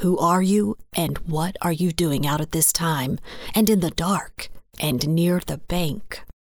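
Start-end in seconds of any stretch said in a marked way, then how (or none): none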